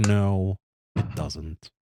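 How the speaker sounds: ordinary talk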